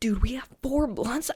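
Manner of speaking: shocked whisper.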